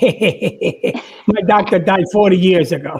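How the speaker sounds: put-on spoken in a Jersey accent. Telling a joke, answering a fan as George Burns: Jersey accent. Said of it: "the Jersey accent?".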